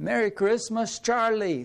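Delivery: high put-on German accent.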